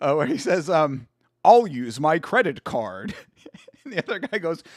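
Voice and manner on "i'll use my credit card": slow, over-the-top, exaggerated fake American accent. Quoting a favorite South Park line, South Park fake American accent.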